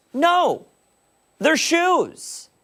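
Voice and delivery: shouting. Arguing about stepped-on shoes, answering another speaker: yelling. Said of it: "I don't know why you're yelling".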